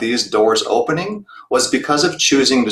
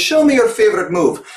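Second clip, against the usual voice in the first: terrible put-on Russian accent, pitched up; 8 semitones higher than usual. Retelling what a coach once demanded every morning, doing his accent with affection. Terrible Russian accent. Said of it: "please forgive the terrible Russian accent".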